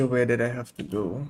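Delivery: ordinary delivery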